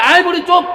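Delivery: high, loud, sharp scolding snap.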